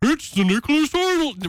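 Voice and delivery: high-pitched announcer delivery. Doing an impression of the show's iconic voice, sales guy Ray: Ray impression. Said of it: "Would you like me to do an impression?".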